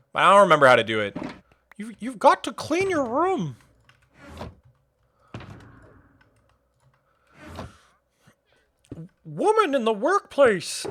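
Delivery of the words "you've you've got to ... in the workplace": put-on Canadian commentator voice, higher and quieter. Attempting a half-remembered impression of a Canadian figure: Jordan Peterson impression. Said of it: "I used to have a Jordan Peterson".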